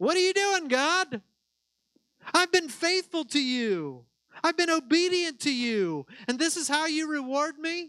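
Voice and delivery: high, mocking yell, pitched way up. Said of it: "I'd be yelling at him".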